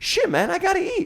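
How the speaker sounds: very high-pitched street-slang voice. Retelling a man who kept asking him for change, imitating the man asking for change. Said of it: "I don't know why I'm talking like this".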